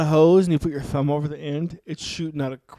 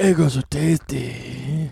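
put-on creepy man voice, much lower; 2 semitones lower than usual. Joking around, in a creepy man voice. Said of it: "Creepy man voice".

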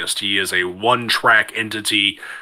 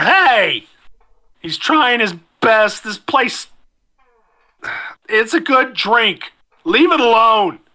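put-on very high, slow drunken drawl; 13 semitones higher, 4 dB louder than usual. The person at the end of the bar pipes up, in a drunken stupor. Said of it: "in his drunken stupor".

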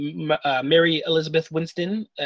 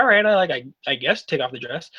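ordinary talk, nothing marked

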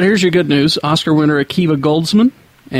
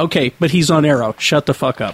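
ordinary delivery

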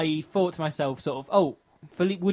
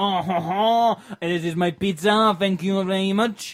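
terrible, put-on French accent, very slow; 4 semitones higher, 4 dB louder than usual. Showing how he would talk when the pizza arrives: bad French accent. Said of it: "the best French accent [name] can do".

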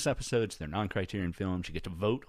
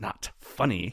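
put-on quiet, hushed hiss. Retelling what the minister said during the service: imitating a quiet hiss. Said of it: "the minister very quietly hissed".

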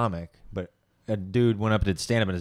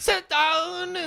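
very high yell, drawn out with falling pitch. Joking about Hitler watching a kid, the speaker acts him out: imitating Hitler shouting. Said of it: "That's your Hitler accent?".

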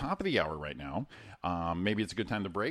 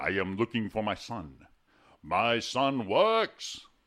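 put-on regal, royal king voice; 4 dB louder than usual. Asked to do the bit, the speaker does a King Jaffe Joffer impression. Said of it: "It's all teeth".

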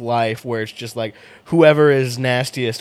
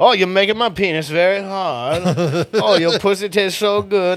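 high, heavy, exaggerated Eastern European accent; 7 semitones higher than usual. Imagining talking in a Borat voice all night at a bar, the speaker performs it: Borat voice. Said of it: "talk in Borat voice".

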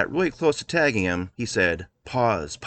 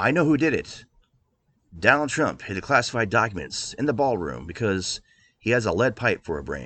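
usual speaking voice

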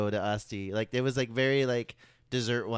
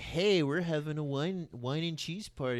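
acted, exaggeratedly sophisticated tone; 4 semitones higher, 5 dB quieter than usual. Retelling own past invite, imitating own sophisticated-sounding tone. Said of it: "I'm trying to sound, like, super, like".

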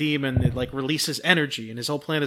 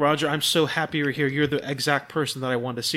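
ordinary talk, nothing marked

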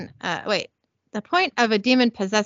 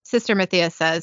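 plain

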